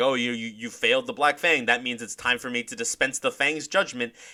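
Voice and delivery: play-acted sneering villain voice, mocking and spiteful. Quoting a villain taunting Jafar after his failure: imitating Sonya mocking spitefully. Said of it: "clearly mockingly and in sort of, like, a spiteful way".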